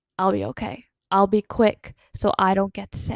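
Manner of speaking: put-on very calm, steady, soothing, reassuring voice. Retelling Pearl reassuring a worried Perry: imitating Pearl's very calm voice. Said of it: "reassures him in a very calm voice".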